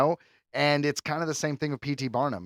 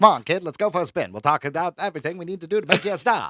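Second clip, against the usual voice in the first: put-on old-movie American accent, classic film style; 3 semitones higher, 5 dB louder than usual. Showing off a favorite accent right after describing it: old American film accent. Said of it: "You're really good at that".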